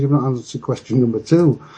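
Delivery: ordinary talk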